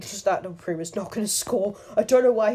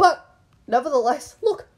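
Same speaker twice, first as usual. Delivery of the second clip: voice cracking, higher and louder; 5 semitones higher, 4 dB louder than usual. Showing a win after some lag, voice cracking. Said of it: "Bit of a voice crack".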